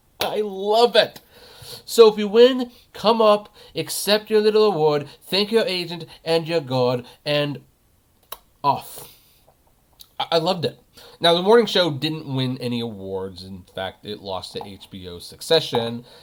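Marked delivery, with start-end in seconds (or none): 1.9-9.1 put-on British accent, higher. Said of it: "try to do my best British accent".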